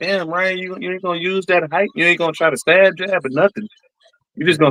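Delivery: high-pitched, frustrated shouting. Retelling watching a fight and yelling at ryan on tv: retelling yelling at the tv. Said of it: "I'm yelling at the T V like".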